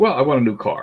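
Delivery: ordinary delivery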